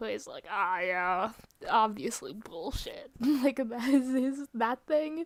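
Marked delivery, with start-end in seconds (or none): 0.5-3.1 low, bone-dry, deadpan delivery. Making fun of how Jonathan Sims talked in the beginning, mocking Jonathan Sims's dry voice. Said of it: "I made fun of his fucking dry voice".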